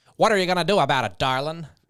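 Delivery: smoky fifties American lady voice. Trying out voices with a partner, asked for a fifties american woman smoking. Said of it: "American, uh, smoking a cigarette".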